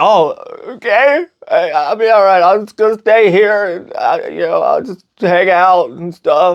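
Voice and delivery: acted, tearful, sobbing, high, weepy crying voice. Retelling a movie scene where a character starts crying: imitating someone crying. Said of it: "And she starts crying".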